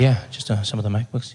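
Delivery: very soft confidential voice. Retelling asking a shop worker for computers: imitating own soft confidential voice. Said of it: "if you speak softly or if you whisper".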